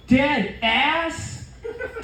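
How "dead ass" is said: "dead ass" rising high, question-like tune. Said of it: "it went something like this".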